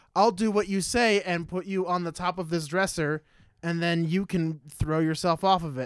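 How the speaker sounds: usual speaking voice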